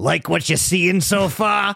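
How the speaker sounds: put-on slow New York accent. Retelling what Mario says at the announcer desk: Mario New York accent. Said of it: "I should do the actual, like, New York".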